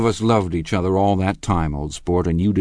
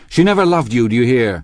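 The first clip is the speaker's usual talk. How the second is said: fast, vivid, excited crying out; 4 semitones higher, 4 dB louder than usual. Springing to his feet, he cries out excitedly to the other man. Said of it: "he cried".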